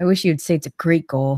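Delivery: mumbled, muttered under the breath. Retelling what someone muttered after the goal was ruled good: mumbled under breath. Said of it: "Jamie mumbles under his breath".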